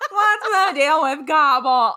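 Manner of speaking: very loud, belted, stand-up punchline delivery. Doing a Seinfeld turkey joke: Seinfeld turkey voice. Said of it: "I was trying to do a Seinfeld turkey".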